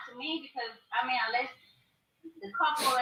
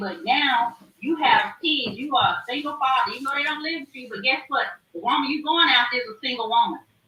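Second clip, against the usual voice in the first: ordinary talk, nothing marked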